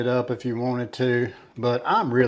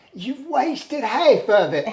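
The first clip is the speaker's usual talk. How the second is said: put-on very high, shrill, reproachful scolding grandmother voice; 13 semitones higher, 5 dB louder than usual. Recalling what grandma would say, imitating grandma. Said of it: "She'd go".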